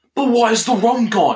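high, loud, belted-out, wacky outburst. Retelling a movie scene, quoting the pirate who lost his rum: imitating Jack Sparrow. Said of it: "But he's like".

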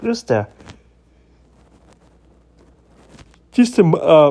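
talking through a yawn. Tired in the morning, talking through a yawn. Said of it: "I'm sorry, I'm yawning".

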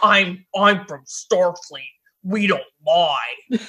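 forced deep, slow voice. Retelling a scene, delivering Wesley's famous quote in Wesley's forced low voice. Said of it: "in a forced lower tone voice".

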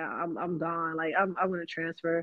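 usual speaking voice

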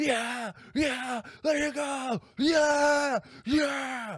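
high, loud, shouting yell.

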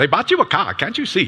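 put-on Ghanaian accent. Telling a Thursday-night story to the audience, quoting Marie in her Ghanaian accent. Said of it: "She speaks like in this Ghana accent".

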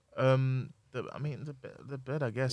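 slow, halting stutter, tripping over words. Answering whether to choose the couch or the bed: stuttering. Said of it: "Why are you stuttering?".

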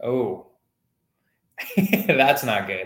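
slow, laughing through the words. Reacting to another speaker's bad news about a contract: laughing while talking. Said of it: "I shouldn't laugh".

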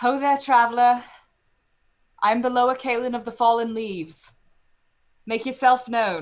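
very loud, high in-character yell. Calling out in character to an approaching rider: yelling in character. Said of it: "you have yelled for this figure".

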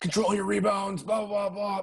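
high, barked, screamed voice. Retelling a coach yelling from the boards during a game: imitating coach screaming. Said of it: "he was screaming at me like".

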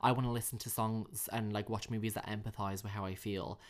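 ordinary talk

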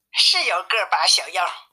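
ordinary delivery

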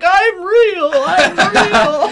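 acted sobbing wail, very high, very loud, very slow. Imitating Stallion in the episode about Santa: imitating Stallion crying. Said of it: "Stallion's just crying. He's like".

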